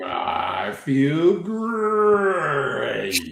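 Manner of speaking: word great stretched out long, mascot-like. Echoing the other speaker's answer: Tony the Tiger voice. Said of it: "I heard Tony going".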